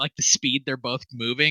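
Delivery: ordinary delivery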